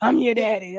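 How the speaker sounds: put-on hoarse voice. Retelling a father showing up after years: imitating father's raspy voice. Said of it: "he got a raspy voice like me".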